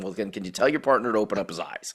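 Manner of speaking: mock-sarcastic tone. Retelling a remark made to another player about their partner, mock-sarcastic retelling. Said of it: "sarcasm too".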